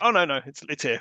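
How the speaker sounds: usual speaking voice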